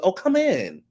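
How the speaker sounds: mock, high-pitched, overeager, desperately eager voice. Retelling a woman inviting Amir into the bathroom: imitating desperate eagerness. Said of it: "So desperate".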